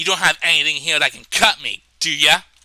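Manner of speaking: put-on very agitated, worked-up, edgy tone. Retelling how a woman slammed something on a metal table, imitating her agitated voice. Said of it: "in a very like agitated voice".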